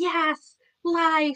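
put-on hyped, fired-up, high-pitched yell. Describing a man's post about saying yes to life, retelling a pumped-up yell. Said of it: "he's just yelling".

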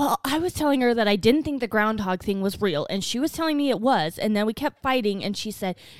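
plain

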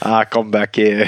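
bad, failed British accent. Trying the fake taxi bit again: bad British accent. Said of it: "That's like Outback".

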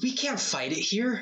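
crying out, very high-pitched. Game master voicing Anton as the group makes it to the top, Anton crying out. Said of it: "Anton just cries out".

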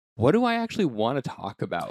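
normal talking voice

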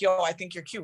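ordinary delivery

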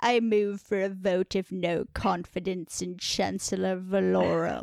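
low, wet, slippery voice. Quoting what he says when moving for a vote, in a wet, slippery voice. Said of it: "that's wet and slippery as hell".

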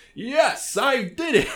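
deliberately bad overacting, very high, shrill, very slow. Quoting how Richter talks when you play him in Smash, Richter's bad voice acting. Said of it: "everyone loves the bad voice acting".

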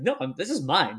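ordinary talk, nothing marked

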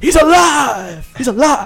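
high squeal with alive stretched out. Retelling the commentator's call of the moment: terrible Jim Ross impression. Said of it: "that was terrible as well".

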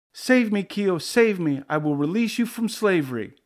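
loud, high, terrified scream. Gooey, threatened by tusks, calls out to Keo swimming near him, screaming in terror. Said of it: "Gooey uttered a loud scream of terror".

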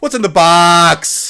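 shrill, booming, loud, high, very slow drawn-out delivery. Doing an impression of how a movie character says this line. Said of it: "do the impression of, of how this person says this line".

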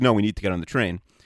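put-on annoyed voice. Retelling her reply about getting on the train, imitating someone annoyed. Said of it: "And she's, like, really annoyed".

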